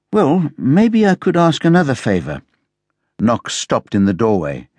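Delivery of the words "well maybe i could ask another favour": tentative, uncertain, hesitant, pitched up. Speaking to a man who has stopped in the doorway, hesitantly. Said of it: "HP said hesitantly".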